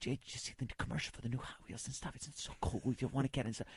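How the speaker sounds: whispered, barely voiced, very quiet and breathy. Retelling how brothers talked in bunk beds at night: retelling a whisper. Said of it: "just whispering to each other".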